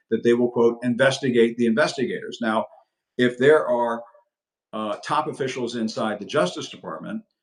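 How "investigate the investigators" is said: ordinary delivery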